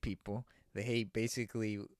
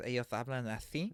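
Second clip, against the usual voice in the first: imitated Castilian Spanish lisp. Describing how people from Spain talk, imitating a Spanish lisp. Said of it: "the Spain Spain people talk with a lisp".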